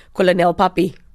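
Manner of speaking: thick, heavy voice. Speaker retells coming around a corner and calling out, in their thickest voice. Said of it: "like in my thickest voice".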